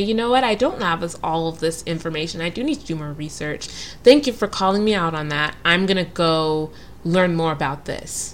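plain

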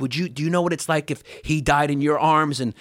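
play-acted furious, heated angry dad voice. Retelling a father screaming from the driver's seat: imitating dad screaming. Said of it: "he's screaming at us while he's driving".

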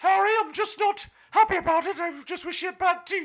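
shrill, very high, very loud female voice. Acting out what the Queen would say to Harry about her, imitating the Queen. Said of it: "It's the Queen".

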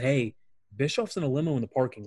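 ordinary talk, nothing marked

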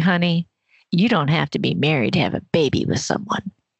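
put-on the sassiest possible low Southern accent. Retelling how a woman answered after seeing a birth certificate: imitating sassy Southern woman. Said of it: "in the sassiest Southern way possible".

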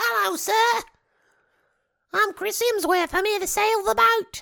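put-on very high-pitched small boy voice. Chatting about a sailing movie, speaker mimics its lead actor: Chris Hemsworth as little boy. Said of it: "He's like a little boy".

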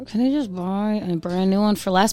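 normal talking voice

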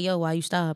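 ordinary delivery

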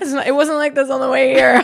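laughing, frazzled voice.

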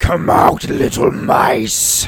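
loud, resounding, booming voice. A game master voices a call heard by everyone in the temple, booming voice. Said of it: "in a booming voice you hear".

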